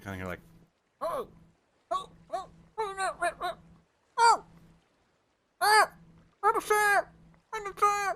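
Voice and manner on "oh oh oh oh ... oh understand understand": very high, loud, muffled distant cries. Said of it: "a muffled voice".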